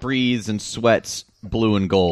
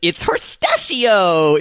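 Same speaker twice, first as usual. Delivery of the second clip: put-on gentle character voice, higher; 8 semitones higher, 4 dB louder than usual. Retelling someone's line as the piñatas came in: Leafos voice. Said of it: "in her Leafos voice".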